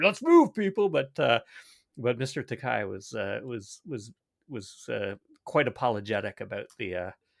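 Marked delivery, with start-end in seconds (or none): 0.0-0.9 loud, pompous, self-important guard shout. Retelling a security guard moving people out of the way: imitating a puffed-up security guard. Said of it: "puffing up his chest a little bit".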